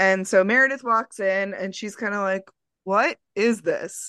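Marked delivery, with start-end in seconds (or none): 2.8-4.1 mock-exasperated put-on voice, slower pace. Retelling Meredith walking in on a romantic surprise, imitating Meredith's exasperated mom tone. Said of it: "she says it in the tone that like, I just like heard my mom".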